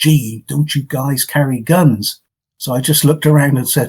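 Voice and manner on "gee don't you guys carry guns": put-on unhurried, slow American woman's accent. Retelling what a lady said to him in a deserted place, American accent. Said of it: "in her American accent".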